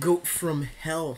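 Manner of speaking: very slow, drawn-out slow-motion voice. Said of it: "Slow-mo? You can do slow-mo".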